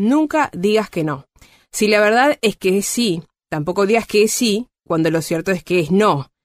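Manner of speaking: very slow, careful reading aloud.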